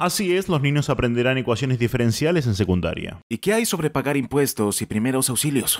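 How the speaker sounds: low, smug official voice.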